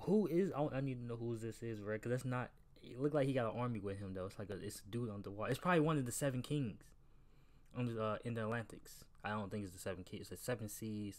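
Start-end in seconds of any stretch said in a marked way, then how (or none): none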